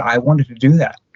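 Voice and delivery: ordinary delivery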